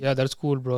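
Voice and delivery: put-on flat monotone voice. Imitating how another speaker talks while editing: imitating a monotone voice. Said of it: "you're very monotone sometimes".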